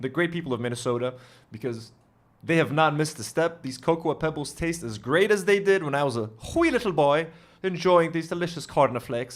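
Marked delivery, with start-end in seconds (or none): 3.6-9.4 put-on Irish accent on every word. Tasting cereal he hasn't had in years, Irish accent. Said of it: "I went for the Irish accent right there".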